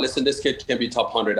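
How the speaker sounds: usual speaking voice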